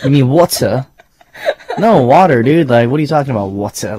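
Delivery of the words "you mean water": put-on British accent, puzzled tone. Retelling a man's puzzled reply about water, in a British accent. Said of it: "Do your best British accent".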